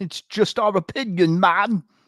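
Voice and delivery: terrible put-on English accent, very high, loud. A co-host asked to say the show's usual sign-off line, in a terrible English accent. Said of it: "That was an English accent".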